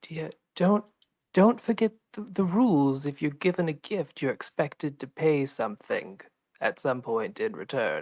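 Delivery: said low and quiet. Leaning down to speak to another character, quietly into her ear. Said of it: "saying that out loud or are you whispering that?".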